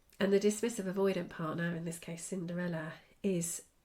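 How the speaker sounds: usual speaking voice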